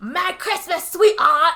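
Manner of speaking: put-on loud, high yell in terrible Cockney accent. Retelling a scene where a man jumps out from behind her, doing Nicholas's bad Cockney yell. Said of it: "his stupid, crazy British accent yelling".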